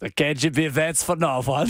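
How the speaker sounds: bad mock Russian accent that sounds French.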